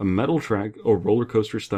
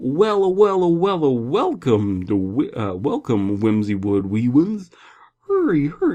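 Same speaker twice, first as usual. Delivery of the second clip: put-on yokel announcer voice, pitched higher; 6 semitones higher, 5 dB louder than usual. Voicing an announcer welcoming visitors, as MatPat doing a yokel. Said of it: "as a yokel".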